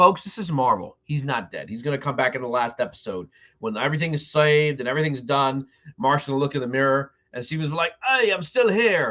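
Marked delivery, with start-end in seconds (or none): 8.1-9.1 deliberately bad put-on English accent, pitched up. Predicting Moon Knight's last episode, the speaker voices Steven in a bad English accent. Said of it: "That's my really bad English accent".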